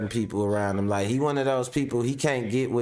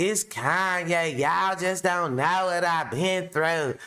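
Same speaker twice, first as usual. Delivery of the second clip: high-pitched, put-on, pleading voice; 6 semitones higher than usual. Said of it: "he be talking like this".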